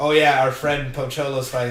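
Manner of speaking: usual speaking voice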